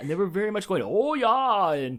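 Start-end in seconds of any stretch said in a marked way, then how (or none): 0.8-1.7 put-on Yooper accent from Michigan's Upper Peninsula. Retelling how the loud neighbors at the campfire talked: imitating a Yooper accent. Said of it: "the way they talk is so stereotypical".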